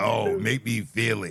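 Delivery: slow, drawn-out, put-on sexy pleading delivery. Imitating what another speaker always says about erotica: imitating Payne. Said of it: "You're like".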